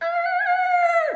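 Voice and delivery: high, loud creaking door sound.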